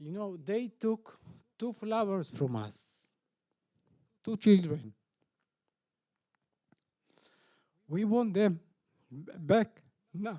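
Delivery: crying through the words, voice breaking. A speaker addressing an audience, crying, voice breaking. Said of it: "This is my first time that I'm actually crying".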